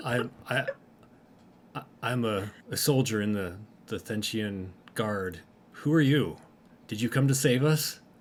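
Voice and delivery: very masculine character voice. Voicing a doll character introducing itself: very masculine voice. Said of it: "in a very masculine voice says".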